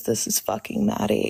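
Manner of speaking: calm, creaky, unsettling voice. Speaker shows the voice they put on as Maddie, in a calm Maddie voice. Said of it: "like when I talk like this".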